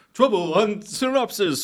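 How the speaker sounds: very high, failed dramatic trailer-announcer narrator voice. Recapping a movie, the speaker tries a bad Clone Wars narrator voice. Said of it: "try to do the Clone Wars guy's voice that does all of the recaps".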